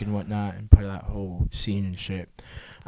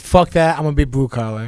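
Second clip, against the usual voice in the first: ordinary talk, nothing marked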